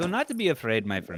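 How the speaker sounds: put-on Indian accent. A speaker who used to be afraid to do accents now tries one, indian accent. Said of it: "an Indian accent".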